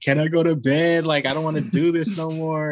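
put-on high, tearful, crying childlike voice. Retelling being made to write an essay late at night: mock crying as a child.

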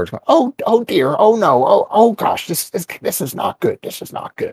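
high, small, whiny little voice. Narrating a scene, voicing a young elf behind a door, whiny little voice. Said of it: "kind of a whiny little voice behind the door".

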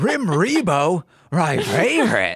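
slow, swooping, drawn-out cartoon dog voice. Pitching a joke line for a sketch: Scooby-Doo voice. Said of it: "we wanna have Scooby going".

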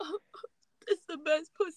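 acted-out, high, blubbering, sobbing crying voice. Imagining a man who starts crying, imitating a man crying. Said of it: "crying like".

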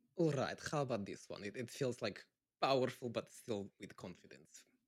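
put-on Russian accent. Trying another russian accent on request: russian accent. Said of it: "I'll try to do another Russian one then".

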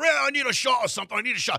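put-on thick, heavily laid-on South African accent. Retelling a late-night visit from Sean Morgan: Sean Morgan impression with thick South African accent. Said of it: "this thick, like, you know, South African accent going".

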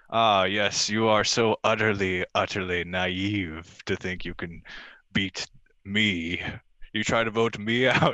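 sinister, evil villain monologuing voice. Imitating a reality show contestant's words as an evil villain monologue: imitating an evil villain monologue. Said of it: "sounds like an evil villain's evil monologue".

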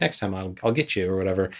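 put-on joking manner. Retelling what she told him about the next dinner, imitating her joking.

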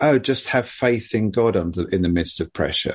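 ordinary talk, nothing marked

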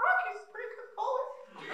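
little, squeaky cartoon mouse voice. Retelling a classmate suggesting him as goalie, in a Mickey Mouse voice. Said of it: "That's how it sounded, like Mickey Mouse".

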